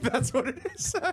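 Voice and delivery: giggling while talking.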